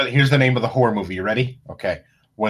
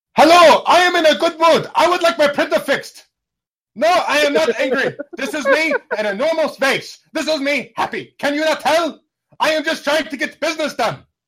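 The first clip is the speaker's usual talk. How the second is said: put-on German accent, very high and loud; 5 dB louder than usual. Showing how the speaker's german clients sound, imitating german clients' accent. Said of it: "I've got German clients. This is what they sound like".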